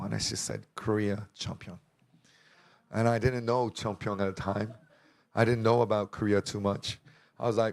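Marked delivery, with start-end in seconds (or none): none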